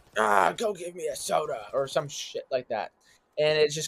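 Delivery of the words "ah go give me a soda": badly acted, slow, dragged-out, cringy wannabe-tough voice. Mocking a recast game character's voice acting: imitating the new Woods voice. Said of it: "this guy who's trying to sound like the old Woods".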